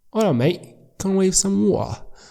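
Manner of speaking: London Cockney accent. Showing how Londoners pronounce water: Cockney accent. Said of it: "it's a Cockney accent".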